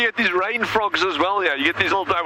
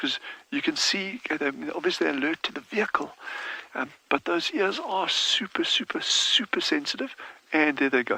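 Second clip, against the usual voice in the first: talking in a whisper; 6 dB quieter than usual. Watching a family of bat-eared foxes forage nearby: talking in a whisper. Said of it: "So I'm just gonna talk in a whisper here".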